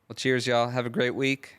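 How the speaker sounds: voice cracking. Host signing off to listeners for the week, voice cracking. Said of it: "having a voice crack there".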